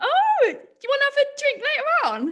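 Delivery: very high-pitched put-on goblin creature voice. Asked by the others to put the goblin voice on: goblin voice. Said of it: "Put your goblin voice on".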